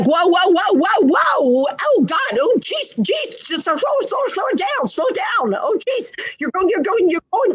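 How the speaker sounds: acted-out, stuttery, very high, loud, panicked pleading. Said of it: "it's almost stuttery, ... becoming quite distressed and loud".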